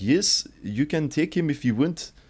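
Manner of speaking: put-on high-pitched South African accent, teacher voice. Quoting a teacher from the speaker's school days, in a South African accent. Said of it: "she was South African".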